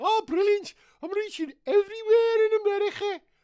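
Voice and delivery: put-on very high, loud Scouse accent, leaning on "America" ending. Voicing a coronavirus puppet asked how America is going: Scouse accent. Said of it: "He actually said America".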